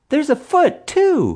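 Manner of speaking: eager, excited, very high-pitched shout. A daughter calls out to her parents at the shark tank, shouting excitedly. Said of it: "his daughter shouted excitedly".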